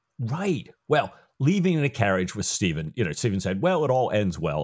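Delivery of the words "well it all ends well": plain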